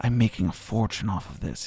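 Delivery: hushed whisper, very low and quiet. Gentleman officiating the sword in the stone confides to the visitor, whispering aside. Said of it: "he whispers to you".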